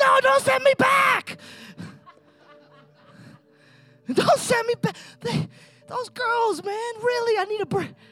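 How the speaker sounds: irritated, put-out tone. A speaker retelling Lazarus being called from the tomb acts him out: mock-angry Lazarus complaining. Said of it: "I bet Lazarus was mad".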